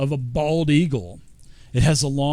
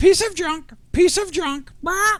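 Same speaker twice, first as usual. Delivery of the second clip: very high, squawky parrot voice; 3 dB louder than usual. Playing a parrot as someone shows it an amulet, in a parrot voice. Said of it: "I'm trying to do my best parrot voice".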